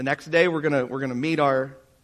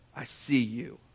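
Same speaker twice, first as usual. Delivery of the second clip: deep, soft, low baritone rumble; 3 semitones lower, 7 dB quieter than usual. Retelling what the guy on speakerphone said to Tandy, in Moses's deep baritone voice. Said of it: "in his deep baritone voice".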